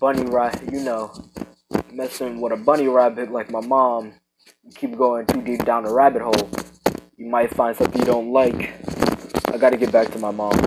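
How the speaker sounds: plain reading voice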